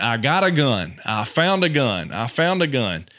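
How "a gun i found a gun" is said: ordinary talk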